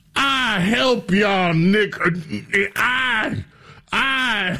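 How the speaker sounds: put-on southern accent. Mocking a politician's words about helping people: mock Old South accent. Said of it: "in the language of the Old South".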